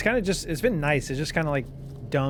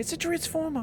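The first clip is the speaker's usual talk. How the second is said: very high, squeaky, frantic yelp. Mocking how a man talks in Transformers: mocking high-pitched voice. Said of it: "he just would like get more and more high pitched".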